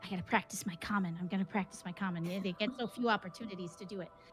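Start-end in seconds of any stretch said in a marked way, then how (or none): 0.0-2.3 whispered, hushed voice. A game master voices something behind a wall practicing its Common: whisper. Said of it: "you hear in a whisper".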